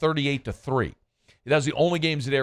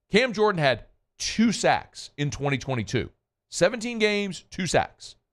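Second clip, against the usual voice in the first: slow, deliberate delivery, slightly raised volume; 5 semitones higher than usual. Repeating a player's stat again for those who forgot, said slowly. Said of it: "Let me say that again slowly".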